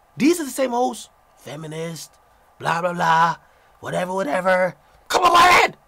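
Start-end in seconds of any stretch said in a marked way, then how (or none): 5.1-5.7 mocking put-on loud New York accent, higher and louder. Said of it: "you know what these hoes always say".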